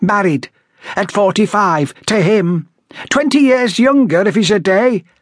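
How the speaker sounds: very high, piercing, cutting voice. A woman goes on talking as her husband invites visitors in, piercing voice. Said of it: "the woman went on in a piercing voice".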